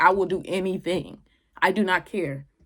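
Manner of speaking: acted, desperate, begging, pleading tone. Retelling a scene as Tamlin walks in, imitating her begging.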